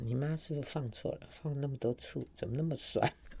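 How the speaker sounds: hushed aside.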